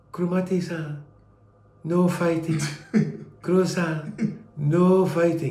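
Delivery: mild, gentle, soothing, coaxing voice. Recalling being held back from behind during a fight, imitating Kawata's very soft voice. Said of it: "a very soft voice was saying like this".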